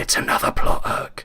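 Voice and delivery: whispering aside. In a narrated story, speaking aside to Liam, whispered. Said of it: "I whispered to Liam".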